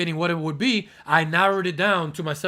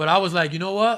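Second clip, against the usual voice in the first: usual speaking voice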